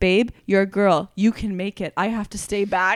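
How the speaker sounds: soft whispering. Pushing toward the stage, retelling what he whispered in her ear, as a whisper. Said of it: "Josh along the way whispers to my ear".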